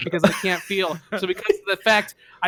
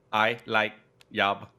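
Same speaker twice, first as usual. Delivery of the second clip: fake, put-on French accent, short; 9 semitones lower, 7 dB quieter than usual. Answering an interviewer in a role-play job interview: put-on French accent. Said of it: "he's privileged with a French accent".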